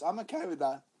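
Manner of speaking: voice cracking, upset. Told the co-hosts will travel separately to shows, agreeing with voice cracking. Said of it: "Your voice cracked as well".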